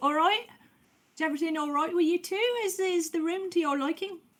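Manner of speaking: high, quick Somerset accent.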